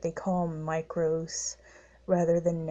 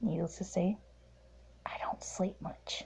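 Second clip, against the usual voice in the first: low, hushed, quiet voice, quieter; 7 dB quieter than usual. Signing off at night while people are sleeping, low hushed voice. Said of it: "I am very sorry about the low voice".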